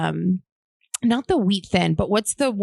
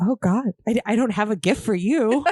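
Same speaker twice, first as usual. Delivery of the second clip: mock, put-on dramatic delivery; 3 semitones higher than usual. Retelling a reaction to getting a gift at dinner: imitating own dramatic reaction. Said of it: "Super dramatic".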